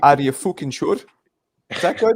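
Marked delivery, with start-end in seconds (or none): 0.0-1.0 put-on, attempted Scottish accent, louder. Trying out an accent on the others: attempted scottish accent. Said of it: "Does that sound Scottish".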